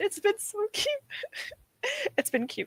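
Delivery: giggly, high and swooping speech. Answering chat about the book being read: getting giggly. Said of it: "I'm getting giggly".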